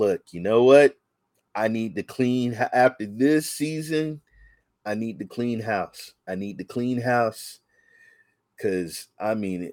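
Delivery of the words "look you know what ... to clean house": ordinary delivery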